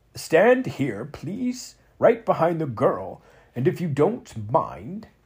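put-on trembling, quavering, fussy old gentleman voice. Narrator reads the Chamberlain waving Max over, quavering fussy old gentleman.

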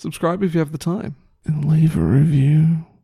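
creepy voice. Asking listeners to subscribe and review: creepy voice. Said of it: "Why did you say that so creepy?".

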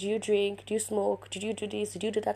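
ordinary delivery

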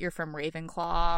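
ordinary delivery

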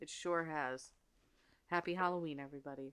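flat, droning, low, very quiet monotone. Wrapping up a festive episode and wishing the audience a good holiday, speaking in a monotone. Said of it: "I don't know why I'm being so monotonous today".

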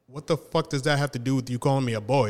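ordinary delivery

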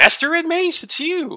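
very high-pitched, slow, drawn-out voice. Retelling a scene where Jar Jar Binks hears Mace: imitating Jar Jar Binks. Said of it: "he hears Mace's voice and he's like".

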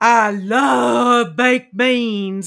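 put-on big, funny, booming, drawn-out Southern accent, very loud. Retelling what a tall, skinny man said across the room, in a big Southern voice. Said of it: "says in this big voice across the room".

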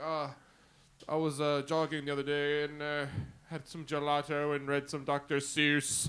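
slow, pretentious, highbrow literary-academic professor drawl. Imitating how literary people talk: imitating a pretentious english professor. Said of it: "were you doing a Snape impression?".

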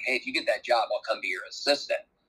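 half-joking, mock-joking manner. Speaker recounting what they told a man about a job, retelling a joking remark. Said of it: "I kind of jokingly said to him".

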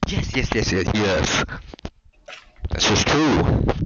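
yelling loudly.

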